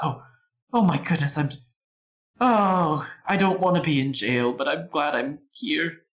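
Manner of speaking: frightened, tearful, yet excited voice. Voicing a jailed character greeting friends: scared, teary but excited. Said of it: "She looks scared. She looks like she's been crying".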